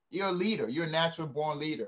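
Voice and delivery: ordinary talk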